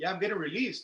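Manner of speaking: play-acted open pride, proud and confident. Retelling an answer to a lifer in the next cell: imitating saying it with pride. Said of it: "I said it with pride".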